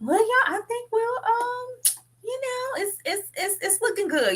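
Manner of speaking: high-pitched mock voice.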